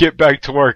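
normal talking voice

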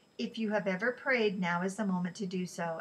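ordinary delivery

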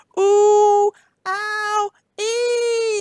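high, loud pained yelps, ee drawn out. Reading a rhyme, a man being bitten by a flea: crying out in pain. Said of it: "cried Mr. McGee".

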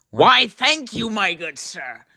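full put-on cartoon creature character voice. Thanking a fan who praised whoever voices him, in Goblin voice. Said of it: "whoever is voicing you is doing a good job".

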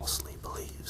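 hushed, breathy whisper under the breath. Talking about the Vault 7 leak video, adding a quick aside in a whisper. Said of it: "That was me whispering".

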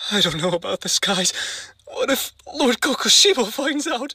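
acted sad, tearful, sorrowful voice. Voicing a worried demon who says it makes him wanna cry: acting sad and tearful. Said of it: "This makes me so sad".

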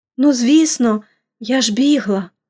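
dazed, bewildered, stunned. Narrator reads Pollyanna, hurt in an accident, replying to her aunt: stunned. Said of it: "ошелешено промовила Поліанна".

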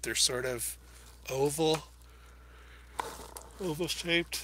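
speaking through a yawn. Speaker explaining paintbrush shapes, yawning. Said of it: "Sorry for yawning".

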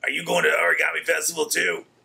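rough, creaky henchman voice. Asking someone if they're going to the festival, gritty henchman voice. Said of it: "gritty henchman-y".

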